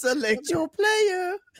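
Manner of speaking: very high, put-on fake French accent. Trying out voices with the group after a Mario impression, in a fake French accent. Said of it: "Did you just speak French?".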